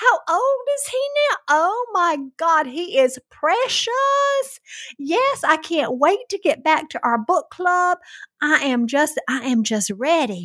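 put-on southern accent. Retelling what a friend said from a car: imitating Margot's Southern accent.

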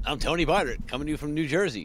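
smooth, soft radio DJ-style announcer voice. Second co-host introduces themselves as the show opens, in a radio DJ voice. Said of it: "A good, nice DJ voice there going".

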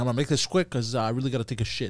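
rushed, fast, hurried delivery. Describing how he would say it, acting out being rushed. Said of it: "I would say, like, I was rushed".

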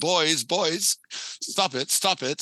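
slow, high-pitched put-on British accent. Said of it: "in his British accent".

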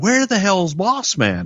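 high, shouted screaming. Recalling shouting over a headset when someone missed his spot: retelling a scream. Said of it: "And I'm screaming".

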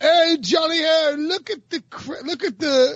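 put-on English accent. Prompted by another speaker to do the bit in an English accent. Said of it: "You have to do this in your English accent".

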